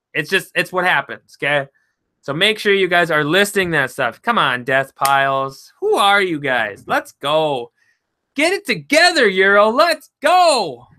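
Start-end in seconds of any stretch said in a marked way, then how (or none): 5.8-10.7 animated, slow, drawn-out rousing voice with swooping pitch. Speaker calls out to the group, urging them on, yelling a little. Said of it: "Sorry if I'm yelling a little bit".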